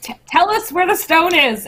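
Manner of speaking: shrill, very high shout in character voice. Speaking in character during a fight, shouting. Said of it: "I'm just gonna shout".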